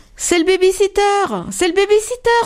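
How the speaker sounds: very high, exclaimed crying out. Narrating a children's story, voicing the young rabbits: exclaiming. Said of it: "S'écrient les lapros".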